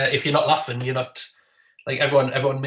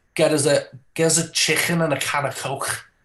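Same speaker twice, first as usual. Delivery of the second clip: put-on throaty, guttural Scouse Liverpool accent. Speaker describing regional english accents to others, doing a guttural liverpool accent. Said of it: "really like guttural ugh, when they talk like that".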